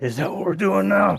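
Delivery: put-on very high, rough heavy-breathing voice. Quoting a character's catchphrase: imitating heavy-breathing character voice. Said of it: "the heavy breathing is the best part of it".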